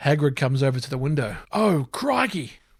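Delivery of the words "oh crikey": pitched high and blurted out as an exclamation. Reading Hagrid's line at the window, sounding like Steve Irwin. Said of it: "That sounded more like Steve Irwin".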